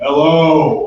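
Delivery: put-on deep manly voice, very low, drawn-out. Asked to perform the really deep manly voice; really deep manly voice. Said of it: "Can you please perform the really deep manly voice?".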